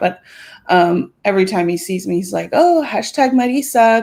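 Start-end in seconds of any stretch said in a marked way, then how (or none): 2.5-4.0 put-on Spanish accent, slightly pitched up. Retelling how a friend greets the speaker, imitating Landon's Spanish accent. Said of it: "he likes to say it, like, with a Spanish accent".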